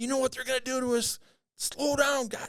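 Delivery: very high-pitched, shrill screaming over the radio. Retelling Fred on the radio during the race, imitating Fred screaming. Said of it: "Fred is on the radio screaming".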